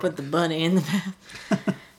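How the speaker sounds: slow, badly done southern drawl. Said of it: "very southern accent given by Nicolas Cage".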